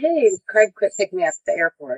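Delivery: plain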